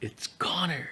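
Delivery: put-on breathy, whispered exclamation. Retelling a guest walking in the door: imitating someone yelling. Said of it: "he just yelled".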